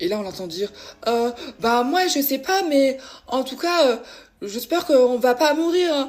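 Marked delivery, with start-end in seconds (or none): 1.0-6.1 mock very loud, playfully amused, pitched-up, drawn-out tone. Retelling what she said while they were lost, imitating an amused joking tone. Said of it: "elle disait ça d'une manière rigolote avec un ton de l'humour".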